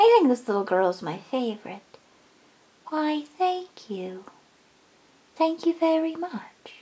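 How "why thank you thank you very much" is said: put-on light, soft, slight British accent. Voicing a little toy pony who says thank you: slight British accent. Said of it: "I think I have a British accent".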